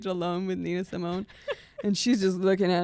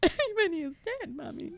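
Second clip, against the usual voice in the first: mock crying child voice, higher; 11 semitones higher than usual. Retelling little kids at the Avengers movie: imitating a crying kid. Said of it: "little Korean kids crying at the".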